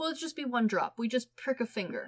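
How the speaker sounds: plain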